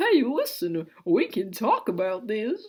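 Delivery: strange oddball voice with swooping pitch. Narrator voices one of two people locked in a struggle, in a weird character voice. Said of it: "Let's do like a weird voice for this".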